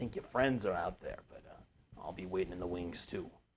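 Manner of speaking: low, soft half-whisper. Retelling what someone said to them, kind of whispering. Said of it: "kind of whispers".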